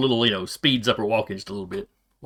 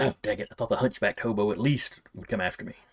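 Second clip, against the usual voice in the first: quiet mumbling under the breath, quieter; 7 dB quieter than usual. Voicing a disappointed character who is mumbling under her breath. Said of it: "mumbling under her breath".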